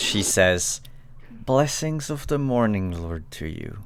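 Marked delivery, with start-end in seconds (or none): 1.3-3.8 forced out through gritted teeth. A character bidding the party farewell, speaking through clenched teeth. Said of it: "through clenched teeth".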